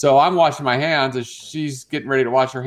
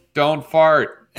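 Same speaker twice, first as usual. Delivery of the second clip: normal talking voice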